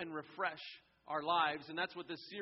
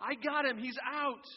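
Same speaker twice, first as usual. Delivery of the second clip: put-on high, kid-like playground shout; 8 semitones higher, 4 dB louder than usual. Telling a story about a kids' ball game, imitating a kid yelling. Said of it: "the kid who threw the ball yells".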